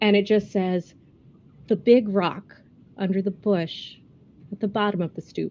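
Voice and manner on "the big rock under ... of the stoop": quiet, hushed whisper, close in. Narrating a scene, voicing a familiar voice right in the listener's ear, quiet whisper. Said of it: "a familiar voice quietly whisper in your ear".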